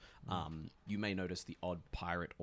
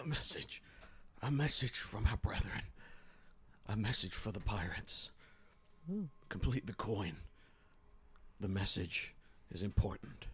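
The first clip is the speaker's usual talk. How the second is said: reverberating, repeating, echoing chorus of voices; 3 semitones higher than usual. Game narrator voicing a message heard from unseen voices, echoing voices. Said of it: "you hear them kind of echo and say".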